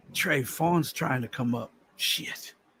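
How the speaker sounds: hushed whispered aside. Speaking aside to trey about the phone, whispering. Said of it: "I thought I was whispering to Trey".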